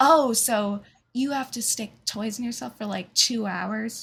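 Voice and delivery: mock, put-on condescending, talking-down tone. Imitating how a woman talked down about the speaker's profession: mock condescending tone. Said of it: "talking down to you; The tone makes such a difference".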